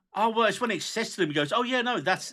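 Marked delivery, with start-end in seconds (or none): 1.6-2.4 bright, delighted, cheerful voice. Retelling how a character explains the mushroom, imitating someone speaking happily. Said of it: "really happily about it".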